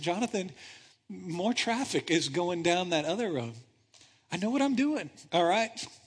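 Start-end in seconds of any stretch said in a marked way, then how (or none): 0.0-3.5 still, small-voiced delivery. Retelling Elizabeth's remark as he drives past the road signs, imitating Elizabeth's quiet voice. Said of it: "in her quiet, still small voice".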